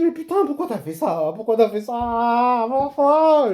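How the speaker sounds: slow, loud, exasperated and despairing pleading tone.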